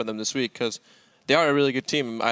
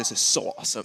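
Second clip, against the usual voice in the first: put-on German accent. Quoting what someone said right after the fight: put-on German accent. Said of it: "I like your German accent for that one".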